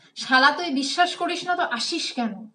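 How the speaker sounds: ordinary talk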